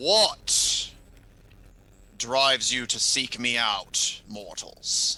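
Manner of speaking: deep voice of a great beast, dragon. Game master voices a winged creature addressing the players, in a deep, booming voice. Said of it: "in a deep, booming voice".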